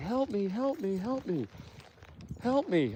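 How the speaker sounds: crazy, high-pitched, hushed mock scream.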